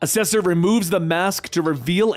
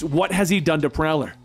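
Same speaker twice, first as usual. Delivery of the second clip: ordinary delivery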